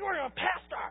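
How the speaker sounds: quiet, reproving, reproachful tone. Pastor retelling how his wife reacted to him yelling out the window, imitating his wife. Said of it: "my wife's like".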